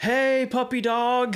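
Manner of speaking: acted loud yelling. Retelling how a boy in a stroller yelled to get a dog's attention: retelling a boy's yell. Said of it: "yelling at him".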